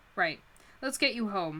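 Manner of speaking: plain reading voice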